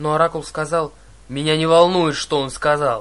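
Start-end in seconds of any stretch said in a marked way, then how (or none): 1.3-3.0 deafening, thunderous, much louder, cutting in. Narrator reads a character cutting off another mid-protest, deafening interruption. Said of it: "Прервал ее Арес так оглушительно".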